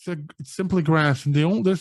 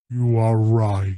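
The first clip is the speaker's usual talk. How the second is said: deep, low, resounding giant's voice from nowhere; 6 semitones lower than usual. Narrating a game, the speaker voices a voice from the cornfield: deep booming voice. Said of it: "you hear a deep booming voice".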